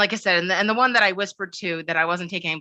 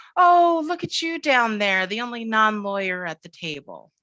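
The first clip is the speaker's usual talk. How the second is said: play-acted, patronizing, talking-down voice; 3 semitones higher than usual. Retelling what a senior partner said down the table to the speaker, mimicking a condescending voice. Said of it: "in this real condescending voice".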